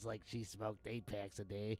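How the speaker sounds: soft, smoky, cartoonish old-woman voice. Describing a TV bailiff named Flo, an old granny: Flo's old granny smoker voice. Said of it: "talked like this".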